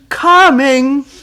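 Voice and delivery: very loud, high-pitched shout. Retelling a call for tea, the answer comes shouting back: retelling a shouted reply. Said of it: "there's a shout coming back".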